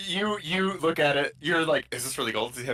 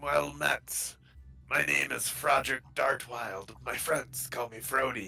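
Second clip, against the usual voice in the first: raspy, rasping corpse-like voice; 2 semitones lower, 4 dB quieter than usual. Voicing a putrid corpse at a kitchen table introducing itself, in a raspy Froderick Dartwild voice. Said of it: "In a raspy voice, the creature says".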